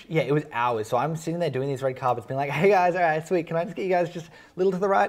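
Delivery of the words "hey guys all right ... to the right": fake-cheery smiling voice, stressed, higher and louder. Retelling directing people on a red carpet, imitating forced cheerfulness while stressed. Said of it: "stressing with a smile on my face".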